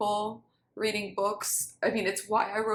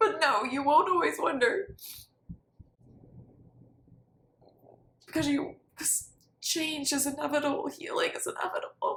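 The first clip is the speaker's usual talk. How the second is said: tearful, pitched-up speech through crying; 6 semitones higher than usual. Answering their own question about always wondering, crying while speaking. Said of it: "I'm crying as I say".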